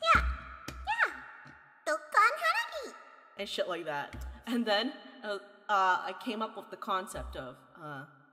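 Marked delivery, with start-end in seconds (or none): 0.1-2.9 very high, swooping, sing-song character voice. Retelling imitating Klee during a game event: Klee voice. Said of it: "I was imitating Klee".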